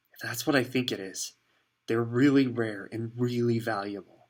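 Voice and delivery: reverent, awed, confiding, secret-sharing delivery. Ron reacts to the cloth that slid to the floor: hushed voice. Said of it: "he said in a hushed voice".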